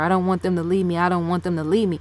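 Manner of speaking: ordinary talk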